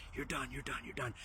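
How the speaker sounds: hushed whisper spoken close in the ear. Retelling being whispered to in the ear: imitating someone whispering. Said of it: "Greg is whispering in my ear".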